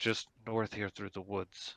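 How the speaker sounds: loud, projected stage whisper. Narrating a scene, the speaker voices a character guiding the group, in a loud whisper. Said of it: "He kind of whispers loudly".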